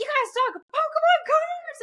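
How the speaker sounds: very high-pitched, giddy, excited gushing. Retelling what the cab driver said about pokemon cards, imitating excited gushing. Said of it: "she's going nuts".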